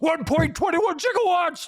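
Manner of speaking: acted frantic screaming. Retelling a moment beside the Time DeLorean: screaming like Doc Brown. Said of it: "I'm screaming at him like Emmett, Emmett Brown".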